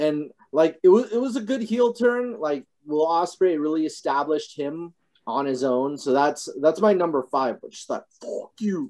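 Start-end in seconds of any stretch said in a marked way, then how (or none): 8.2-8.9 put-on deep, low whisper in a British accent. Repeating a wrestler's line to Okada: imitating Will Ospreay's deep British accent. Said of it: "that deep, you know, Cagney British accent".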